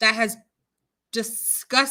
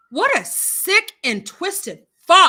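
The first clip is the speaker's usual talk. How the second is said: too loud, higher-pitched outburst. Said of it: "turn your volume down if I get too loud".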